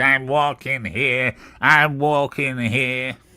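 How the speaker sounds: loud, shouted yell. Retelling how someone walks around New York: imitating someone screaming at taxis. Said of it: "screaming at taxis".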